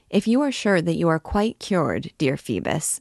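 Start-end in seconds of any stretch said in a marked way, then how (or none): none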